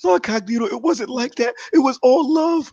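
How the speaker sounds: very high pitched, near-tears, tearful pleading voice. Imitating an opponent who looked in tears: imitating someone near tears. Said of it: "looked like he was in tears".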